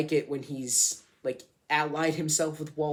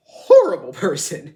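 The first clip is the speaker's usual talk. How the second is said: very loud, voice breaking mid-line; 2 semitones higher, 14 dB louder than usual. Talking about walt, the speaker's voice cracks mid-sentence: voice cracking. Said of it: "That was a weird voice crack I just did".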